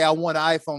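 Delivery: ordinary talk, nothing marked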